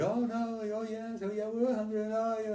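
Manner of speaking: chorus of high shouts. Retelling a crowd urging someone to stay: imitating a crowd shouting. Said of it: "the people started shouting".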